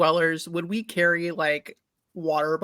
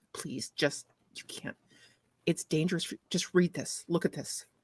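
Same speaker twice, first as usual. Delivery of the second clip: hushed, urgent sotto voce whisper; 10 dB quieter than usual. In a tabletop game, a player's character speaks in a crowded space, sotto voce. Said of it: "I am trying to be like sotto voce".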